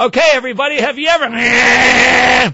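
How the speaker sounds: put-on very high, loud projecting voice. Retelling addressing everybody over a running rototiller, told not to yell, retelling projecting over noise. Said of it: "So I'm projecting over the rototiller".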